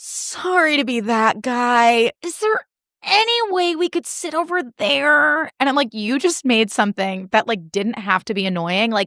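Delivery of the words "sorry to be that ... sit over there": put-on exaggerated politeness, high and drawn-out. Imitating an ex asking a restaurant to move tables: imitating an over-the-top apology. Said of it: "over the top".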